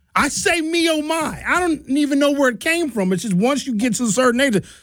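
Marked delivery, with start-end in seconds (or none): 0.6-1.5 put-on weary, pitched-up old man's groan. Showing how he sounds sitting down now: old man groaning sounds. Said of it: "I make old man sounds now".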